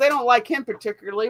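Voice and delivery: ordinary talk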